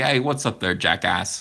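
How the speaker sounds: New Yorker's voice and New York accent. Explaining how a comic character should sound, doing a Frank Rizzo New York voice. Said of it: "Cyberfrog's a New Yorker".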